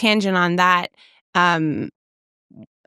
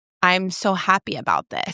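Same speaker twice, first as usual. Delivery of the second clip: usual speaking voice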